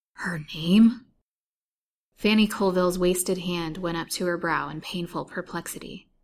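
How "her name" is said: gasped words, louder. A man sitting frozen on the foot of a cot questions her; gasped. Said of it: "he gasped rather than spoke".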